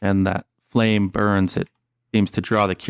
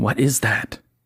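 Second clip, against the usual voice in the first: whispered character voice; 2 semitones higher than usual. Game master voices Detective Nichols backing away with the player, Detective Nichols whispering. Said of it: "He whispers at you".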